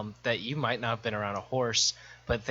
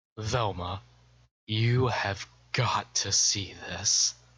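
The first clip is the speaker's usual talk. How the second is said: hushed stage whisper. Speaking in character to a companion named Velma: half-whispering. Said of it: "I whisper back".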